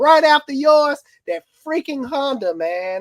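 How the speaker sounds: loud, shrill yelling, pitched way up. Complaining about car engines breaking down one after another, the speaker is yelling. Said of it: "sorry, I'm yelling".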